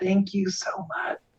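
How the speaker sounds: hushed, breathy whisper-yell under the breath. As Crackle leaves, her player voices Crackle's thanks in a whisper-yell. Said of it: "I like kind of whisper yell".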